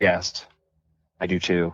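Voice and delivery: deep, dead-serious, earnest voice. Chatting in a group, the speaker answers in a serious voice. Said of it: "That was my serious voice".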